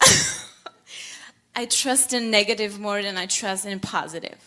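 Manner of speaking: stumbling words with laughter breaking in. Repeating a statement on request, laughing while talking. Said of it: "while you were saying that, you were laughing".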